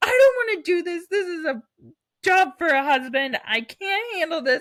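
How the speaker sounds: high, loud crying yell. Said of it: "yelling 'cause I was like".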